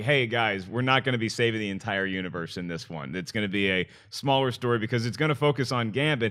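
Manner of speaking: plain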